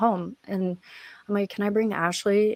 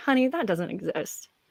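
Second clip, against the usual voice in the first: openly mocking, teasing tone. Retelling how the session interviewer answered a hope of rescue: imitating someone mocking. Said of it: "and she mocked me".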